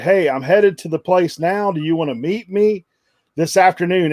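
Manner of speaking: ordinary delivery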